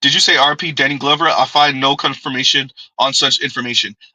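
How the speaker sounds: usual speaking voice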